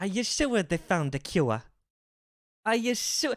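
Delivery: accent that comes out Irish. Pronunciation lesson recording, modelling an example sentence in an Irish-sounding accent. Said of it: "That sounds Irish".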